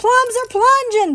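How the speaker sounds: very high, loud booming shout. Reading a story, the narrator's brother calls out as they start to sink, booming. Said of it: "boomed my brother".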